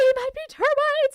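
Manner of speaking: mock shrill, very high, loud panicked yelp. Retelling calling him back about the bugs: imitating own panic. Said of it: "And I was freaking the fuck out".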